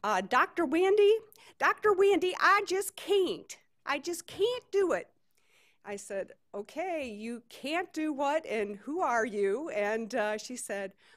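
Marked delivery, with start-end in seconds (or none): 0.0-5.1 put-on shrill Southern accent. Retelling a phone call from a caller named Leanne: shrill Southern accent. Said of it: "I'm going to try to do a southern accent here".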